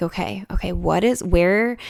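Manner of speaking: ordinary delivery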